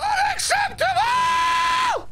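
piercing, shrill, very high screamed yell. A streamer does what chat requested, a high-pitched screamed yell. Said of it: "Can you yell unacceptable in a pitch scream once?".

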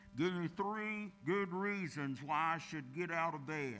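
smothered, muffled voice. Telling a joke, the husband answers his wife with his face in a pillow, muffled voice. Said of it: "he responded with a muffled voice".

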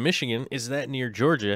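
ordinary delivery

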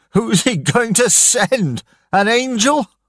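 angry, furious laugh, voice very high. Stranded on a rock in a storm, a man answers a woman, laughing angrily. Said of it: "Daniel laughed angrily".

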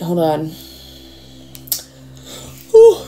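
said through a yawn. Speaker pausing to check a date during a reading, yawning. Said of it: "sorry, yawn".

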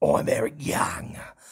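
gruff, scary, menacing tough-guy voice. Describing a wrestler's voice and imitating it: gruff Eric Young voice. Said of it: "badass, scary voice".

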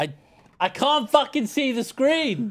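shrill, very high, rising shouted complaint. Complaining during a game about not seeing the screen: yelling. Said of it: "Stop yelling!".

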